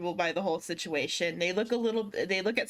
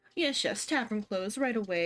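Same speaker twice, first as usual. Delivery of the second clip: obsequious, ingratiating tone; 2 semitones higher than usual. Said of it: "rub their hands together and, like, approach you and be like".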